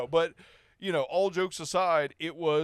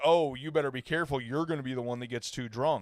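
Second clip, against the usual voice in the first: acted friendly, playful, needling teasing tone; 3 semitones lower than usual. Retelling how the mother ribbed the speaker over drinking: imitating teasing ribbing. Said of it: "rib poke me".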